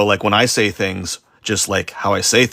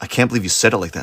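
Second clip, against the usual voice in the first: put-on accusing tone, faster. Retelling how people react to their tone, imitating someone accusing. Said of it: "they're like".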